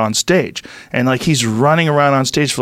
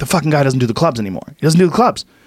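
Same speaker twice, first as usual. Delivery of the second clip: play-acted, frothing, worked-up angry rant. Retelling a comedian storming into the green room: imitating an angry rant. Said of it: "he was, like, angry".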